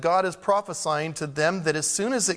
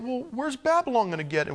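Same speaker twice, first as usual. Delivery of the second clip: much higher-pitched, doubting tone. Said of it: "You say".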